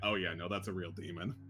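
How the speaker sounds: low, hushed mutter under the breath. Voicing bandits overheard in the fog, muttering. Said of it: "a little bit of mutterings".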